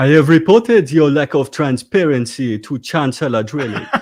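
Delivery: loud, high-pitched fake Nigerian accent. Actor reads a line after being asked for a Nigerian prince: put-on Nigerian-prince accent. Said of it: "in your best Nigerian prince running a slightly dodgy".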